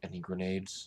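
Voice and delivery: very low, hushed murmur. Tabletop player's character tilts toward a companion and asks in a very low voice. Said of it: "in a very low voice".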